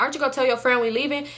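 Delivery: ordinary talk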